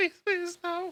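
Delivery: put-on very high, tiny, whimpering baby voice. Narrator voicing a terrified small creature pleading, in a whimpering baby voice. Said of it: "I have a baby voice".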